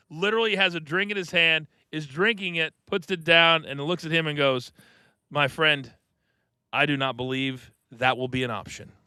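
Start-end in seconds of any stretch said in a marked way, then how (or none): 5.3-8.8 mock calm deadpan tone, lower. Retelling how Hurricane answered without missing a beat: imitating an unfazed deadpan reply. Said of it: "Hurricane does not even miss a beat".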